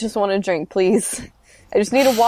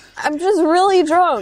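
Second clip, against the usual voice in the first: high-pitched yell, calling out; 8 semitones higher than usual. Playing a character calling after the leaving barmaster: yelling after someone. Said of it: "I just yell after him".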